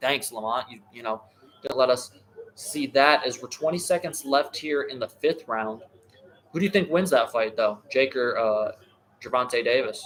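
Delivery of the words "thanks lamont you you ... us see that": ordinary talk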